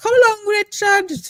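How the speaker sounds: loud, very high woman's voice. Speaker shows how they used to say a catchphrase, doing a Hyacinth Bucket impression. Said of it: "For the the high you have seen Hyacinth".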